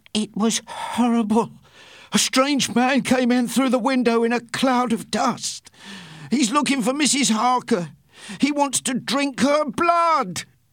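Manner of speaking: very high-pitched, terrified gasps. Narrator reads a dying man's words to the men who ran in, gasping, terrified. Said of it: "he gasped, terrified".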